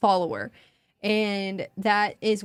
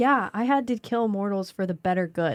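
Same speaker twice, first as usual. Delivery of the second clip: put-on rueful, sorry, regretful tone. Acting out what Andre says in the next chapter: imitating Andre with regret in voice. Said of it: "saying that with regret in his voice".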